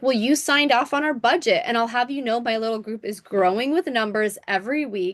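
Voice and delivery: ordinary talk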